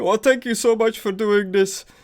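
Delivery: put-on acted drunken sobbing. Acting out a man who starts out drunk and crying: mock drunk crying. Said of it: "starts like drunk and crying".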